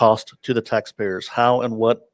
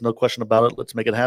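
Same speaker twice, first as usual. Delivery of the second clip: ordinary talk, nothing marked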